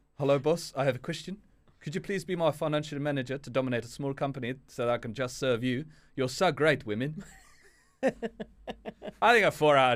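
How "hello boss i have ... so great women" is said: attempted South African accent. Reading a text aloud on request in an attempted South African accent. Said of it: "What accent would you like me to read this out in?".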